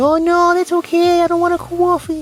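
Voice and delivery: put-on polite, small voice. Retelling turning down a woman's offer of coffee, in a put-on nice little voice. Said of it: "that little shitty voice you do when you're trying to be nice".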